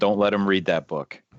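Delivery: whispered, in a character voice. Pulling Aramil aside away from his bodyguard: whispering in character. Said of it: "whisper in your ear".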